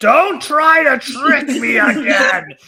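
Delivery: very loud, very high, drawn-out yell. Voicing a character who yells at a glitchy hologram: character yelling. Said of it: "Clausel just yells out".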